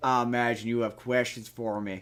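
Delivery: put-on heavy Southern accent laid on thick, low and hushed. Describing a movie's ending, quoting Henry Cavill's character: Henry Cavill with thick Southern accent. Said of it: "a thick like Southern accent".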